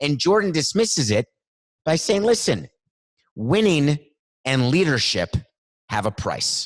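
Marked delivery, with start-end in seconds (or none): 2.2-6.7 very stern, severe, no-nonsense delivery. Quoting Jordan defending his harsh leadership: imitating Jordan's stern tone. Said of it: "He said it in a very stern tone".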